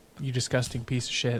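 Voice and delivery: ordinary talk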